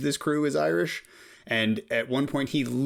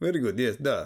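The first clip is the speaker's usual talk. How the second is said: put-on Russian accent. Asked how their russian accent is, answering in a russian accent. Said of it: "How's your Russian accent?".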